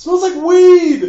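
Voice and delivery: shrill, booming, high, loud yell, weed drawn out. Retelling calling back to someone while skiing downhill: retelling a yell. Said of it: "I'm sort of yelling as I'm going down".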